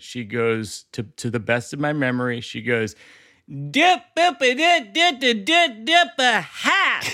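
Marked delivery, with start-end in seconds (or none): 3.5-7.0 put-on high-pitched, thick, unintelligible Southern accent. Retelling what a lady at an airport in georgia said, unintelligible southern accent. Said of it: "I run into a Southern accent where it is unintelligible".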